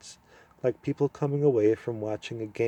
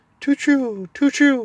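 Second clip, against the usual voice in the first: sorrowful owl voice, very high and loud; 9 dB louder than usual. Reading a story aloud, the owl answering: sad owl voice. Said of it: "said the owl sadly".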